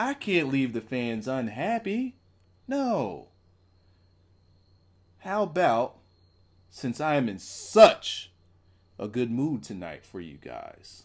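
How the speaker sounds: play-acted heavy sarcasm with swooping pitch. Acting out a wrestling promo for Bray's character: sarcastic Bray promo. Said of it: "Completely sarcastic".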